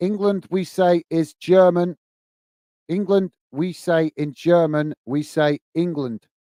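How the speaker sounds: ordinary talk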